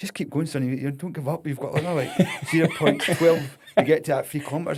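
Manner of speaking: cheering loudly at a high pitch.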